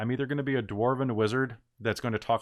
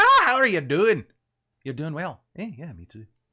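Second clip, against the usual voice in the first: put-on Scottish accent, higher and louder; 5 semitones higher, 6 dB louder than usual. Showing a character voice for a game: Craig Ferguson voice. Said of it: "a Craig Ferguson voice and kind of talk like this".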